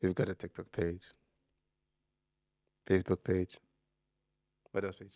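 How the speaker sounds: playfully seductive, sultry put-on voice. Redoing the other speaker's plain list of social media pages, mock seductive voice. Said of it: "Let me do it".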